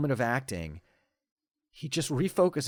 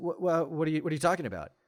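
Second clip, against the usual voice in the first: completely flustered, fast, stammering delivery. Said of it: "he gets completely flustered and says".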